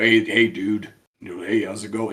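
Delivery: bad put-on very low narrator voice. Describing a narrator's voice, doing a terrible Sam Elliott type voice. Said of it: "That was a terrible impression".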